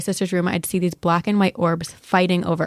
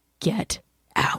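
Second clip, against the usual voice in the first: deep guttural demonic whisper, throaty; 2 semitones higher, 4 dB quieter than usual. Retelling a ghost story where the sleeping sister speaks: imitating a deep guttural voice. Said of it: "out of her mouth comes a deep guttural voice saying".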